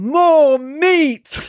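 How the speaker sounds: acted-out booming, curt bellow, high and drawn-out. Retelling how a woman reacted to the lunch she was brought, retelling a booming demand. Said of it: "took one look and boomed".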